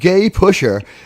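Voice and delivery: ordinary delivery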